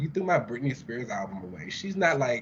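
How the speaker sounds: ordinary delivery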